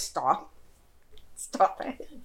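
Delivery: low, hushed, embarrassed under-the-breath mutter. Acting out a woman's embarrassed reaction, retelling her muttering under her breath. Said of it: "under her breath".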